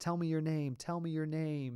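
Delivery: screaming, repeated over and over. Retelling a childhood dream, imitating own past screaming at a creature. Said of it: "so I was screaming it".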